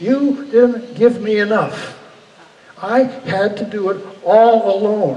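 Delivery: slow, loud, furious screaming. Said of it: "I just screamed in his face".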